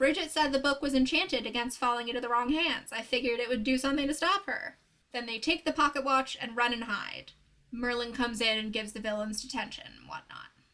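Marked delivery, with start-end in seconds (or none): none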